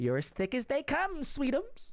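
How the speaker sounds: high character voice with pitch swooping up and down. Reading a chat quote aloud: Auntie Ethel impression. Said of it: "my best Auntie Ethel impression".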